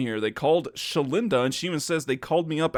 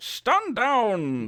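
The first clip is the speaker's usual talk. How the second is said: put-on German accent with raised pitch, commanding; 8 semitones higher than usual. Narrating a scene with guards, the speaker voices Riku: captainish German accent. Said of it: "She's trying to be all like, yeah, like captainish".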